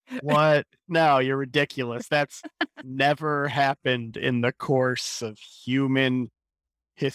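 slow, heavy, dripping, laid-on sarcasm. Replying to a remark about men in power: heavy sarcasm. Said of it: "I'm trying really hard to sell sarcasm here".

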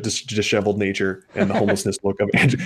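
talking through continuous bursts of laughter.

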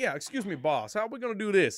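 put-on loud Georgia man's accent. Retelling a man who kept coming up to the speaker, imitating a man from Georgia. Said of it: "He was from Georgia".

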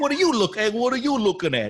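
put-on gruff New York accent. Quoting another speaker's line to a dog: De Niro impression. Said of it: "You become more De Niro".

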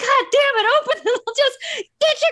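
play-acted very high, shrill yelling. Retelling Kim yelling at Jared stuck behind the glass, imitating Kim yelling. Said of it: "he's yelling at him to just do your blocking".

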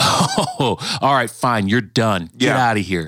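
put-on vengeful, dismissive tone. Retelling how they pictured god as a child: imitating a vengeful god. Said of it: "I saw God as a vengeful one".

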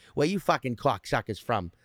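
Boston guy talk. Comparing a Spanish accent, imagining talking to a guy, Boston accent. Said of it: "imagine talking to a fucking guy right now who's like".

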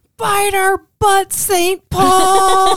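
very loud, very high, drawn-out defiant yell. Retelling how the husband yelled out the car window: retelling a yell. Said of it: "and just yells".

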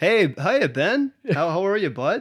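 put-on Canadian accent. Retelling how a woman from Canada greeted him, Canadian accent. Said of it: "Canadian, eh?".

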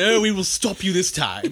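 put-on insipid, bland British accent. Mocking a film villain's lines in an insipid british accent. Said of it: "With the insipid British accent".

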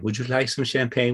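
put-on French accent. Retelling a lady offering champagne at a summit celebration, in a French accent. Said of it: "with this French accent".

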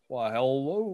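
put-on down-home Kentucky accent. An in-game character greets the arriving visitors, Foghorn Leghorn Kentucky accent.

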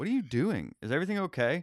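put-on concerned, high voice. Retelling how his wife walked in on him: imitating his wife sounding concerned. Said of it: "she was, like, genuinely concerned".

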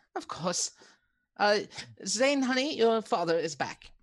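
very high, homely, motherly mum voice. Voicing Jenna greeting the returning party and offering tea: voicing Jenna. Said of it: "And she walks off".

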